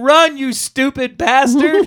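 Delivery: high, stretched-out, long drawn-out scream. Recounting a favorite movie scene where one man yells at another pushing a van: retelling a scream. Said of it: "and he screams at him".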